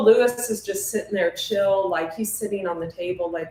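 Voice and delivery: ordinary talk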